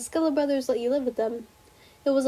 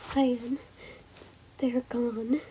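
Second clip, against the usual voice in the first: crying, tearful voice, quieter; 5 dB quieter than usual. Answering a brother who asks why he is crying: crying while talking. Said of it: "why are you crying?".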